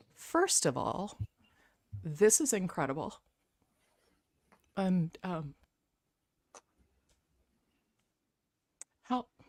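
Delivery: fighting back tears while speaking. Overcome at a long-awaited moment among friends, holding back tears. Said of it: "I'm trying not to cry".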